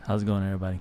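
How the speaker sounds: deep voice. Greeting the audience at the start of a live show: deep voice. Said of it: "I got my deep voice going on today".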